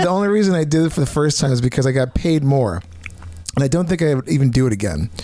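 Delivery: ordinary delivery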